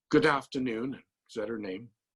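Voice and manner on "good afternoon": very British put-on accent, higher. Retelling a phone call answered by a very British voice. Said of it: "the very British voice".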